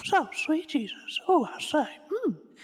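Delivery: put-on very high, loud, slow old man voice. Asked to go on, doing the old guy from Family Guy: Herbert from Family Guy voice. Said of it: "That's alarmingly accurate".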